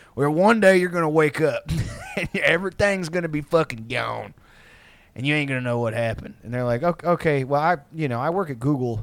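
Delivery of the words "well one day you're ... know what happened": put-on old veteran voice, spoken faster. Speaker talks to someone about their mistakes like an old AA veteran. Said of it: "I'm talking like an old, like, AA veteran".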